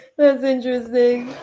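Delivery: talking through laughter. Answering a question about making an appointment on time, laughing while talking. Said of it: "I'm laughing 'cause it's actually".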